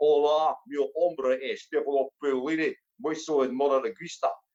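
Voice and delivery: low-pitched Spanish in a Glaswegian accent. A stand-up comedian shows off learning spanish, in a glaswegian accent. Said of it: "Spanish with a Glaswegian twist".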